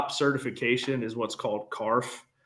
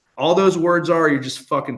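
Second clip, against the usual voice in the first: ordinary talk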